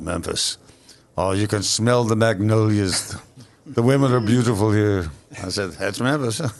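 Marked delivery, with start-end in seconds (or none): 0.0-5.1 put-on English accent. Recall one of the MCs speaking on television on Channel three, in Eric Braeden's English accent. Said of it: "he's got this English accent. He goes".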